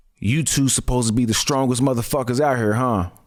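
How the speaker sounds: low, deep, raspy drill instructor voice. Retelling how a man circling them spoke to them, in a deep, raspy voice. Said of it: "this deep, raspy voice".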